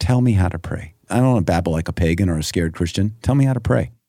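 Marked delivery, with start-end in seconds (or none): none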